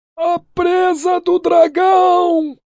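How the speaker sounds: very high, very slow shout, "dragão" stretched. A merchant, seeing something rise from the carved dragon's mouth, shouting. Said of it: "— gritou o mercador".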